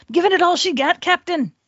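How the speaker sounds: put-on Scottish-accented, high pitch. Joking at the end of the show, Scotty impression. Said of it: "You didn't like my Scotty impersonation?".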